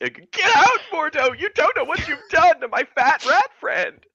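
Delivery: very high, tearful, sobbing cry-shout. A role-player voicing her character as she turns on another character, crying and shouting. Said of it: "tears streaming down her face, and like shouts".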